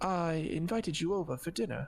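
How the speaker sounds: put-on vampire voice, accent laid on thick. Voicing a character in a game who looks at a player and speaks, vampire accent. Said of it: "I don't know why I'm talking differently now. I can't keep an accent".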